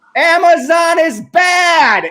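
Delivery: put-on very high, shrill, loud yell over noise. Retelling teaching a class amid drilling noise: imitating own yelling. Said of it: "yelling at my students".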